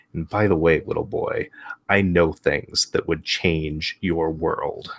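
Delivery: hushed, half-whispered aside. Game narrator voicing a woman walking back to her table: half-whispering. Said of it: "she just kind of whispers to him".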